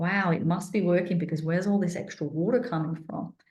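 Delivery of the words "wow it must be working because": ordinary delivery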